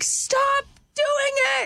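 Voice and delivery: high, slow scream.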